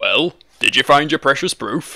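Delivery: sardonic, mocking sarcasm. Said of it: "It sounded kind of sarcastic".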